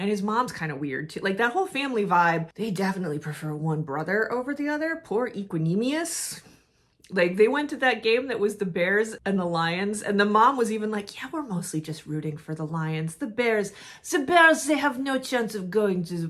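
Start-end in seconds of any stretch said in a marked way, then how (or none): 11.2-16.3 put-on French accent, chatty tone. Retelling what the mom said at the game: imitating the mom in a French accent. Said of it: "why am I doing a French accent?".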